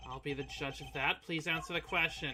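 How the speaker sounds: ordinary talk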